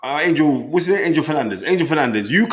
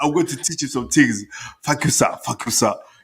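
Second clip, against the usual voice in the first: imitated Nigerian accent; 3 semitones lower, 3 dB quieter than usual. Speaker retells what a man said to them, imitating Nigerian accent. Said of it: "He was like".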